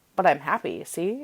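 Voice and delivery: normal talking voice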